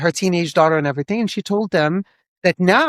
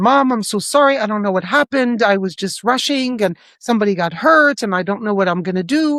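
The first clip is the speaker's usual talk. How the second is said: put-on upset, emotional, distraught pleading voice; 3 semitones higher than usual. Retelling a phone call from a daughter after an accident: imitating an emotional plea. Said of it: "She was really emotional".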